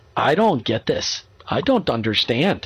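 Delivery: slow put-on Swedish accent across the whole line. Speaker acts out an employee speaking up to the boss: Swedish accent. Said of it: "you don't have to use a Swedish accent".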